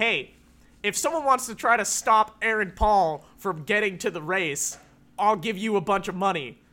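ordinary delivery

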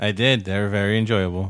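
flat, deadpan, unenthusiastic delivery. Telling the other speaker you enjoyed his crossover list, flat and unenthusiastic. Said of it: "You sounded so enthusiastic about it".

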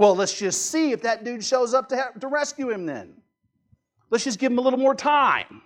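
play-acted derisive, jeering, high mocking taunt. Retelling what someone said about the dying Jesus: acting out mockery. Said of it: "says mockingly".

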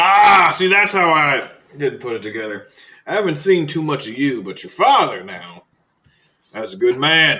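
booming, very loud, high character voice. The game master, as the gunsmith, turns to a player's character: gunsmith character voice. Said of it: "He turns and looks at you and goes, / The gunsmith".

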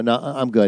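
acted, rattled, panicked, stammering and stumbling delivery. Retelling how he answered his wife's question: imitating own panicked reply. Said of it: "the panic on my face".

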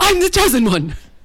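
put-on angry teenager voice, way up high. Showing friends how they read a diary entry, angry Harry Potter teen voice. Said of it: "I read it in angry Harry Potter teen voice".

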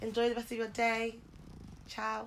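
high, sweet, innocent fairy voice. Co-host signing off the show to listeners, in a fairy-like voice. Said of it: "Why'd you sound like a fairy?".

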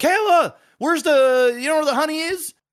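acted yell, high-pitched. Retelling calling out to Kayla while searching for the honey, retelling a yell to Kayla. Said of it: "I'm yelling".

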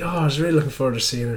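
put-on Irish accent. Retelling what an Irish guy said at an event: imitating an Irish accent. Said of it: "I got his Irish".

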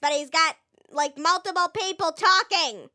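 high-pitched, irritating, annoying cartoon monster voice. Asked which character he was, speaker demonstrates: Bill Cipher voice. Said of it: "sounds really high-pitched and annoying like this".

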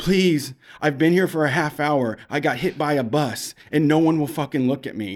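tearful, weeping, crying, pleading voice. Retelling what a crying man on the street said, imitating someone weeping. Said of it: "And he's weeping".

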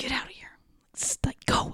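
barely voiced, soft, low-key, hushed whisper. Retelling what the therapist said during a ritual: imitating someone whispering. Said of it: "She was whispering that".

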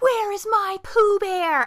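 frantic, high, booming, very loud scream. Retelling an old man screaming for his dog, retelling a scream. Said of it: "he starts screaming".

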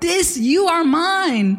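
acted joyful cry, mine stretched. Acting out the Father's words to Jesus: imitating a joyful shout. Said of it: "He's shouting it".

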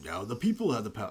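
ordinary talk

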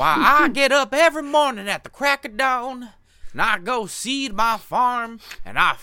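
shrill Appalachian accent. Mocking people who proudly call themselves rednecks, in a southern redneck accent. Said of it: "I actually know people who talk exactly like that".

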